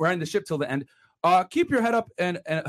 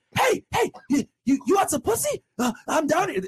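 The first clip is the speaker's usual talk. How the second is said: very high, coaxing, luring put-on clown voice; 10 semitones higher than usual. Mocking the girls the clown world offers, as a luring sewer clown: imitating a luring sewer clown. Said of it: "the girls are gonna be doing this shit to them".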